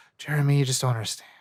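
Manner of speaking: breathy speech, sighed out on one exhale. Imitating a Vampire Diaries character's lines: imitating Nina Dobrev on an exhale. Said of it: "It's always the exhaling".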